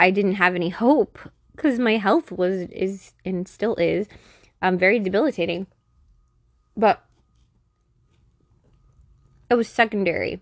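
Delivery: talking while eating, mouth full. Speaker describing their health struggles while eating cake, talking with mouth full. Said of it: "I'm sorry, I'm eating, like, a cake right now".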